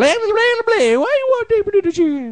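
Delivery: very high, loud crazy babbling voice. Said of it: "that's exactly how he was talking".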